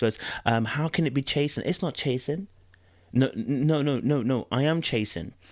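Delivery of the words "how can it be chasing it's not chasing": put-on, turned-on sweet voice. Retelling what a woman said to a man, imitating her sweet voice. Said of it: "she turns on the sweet voice".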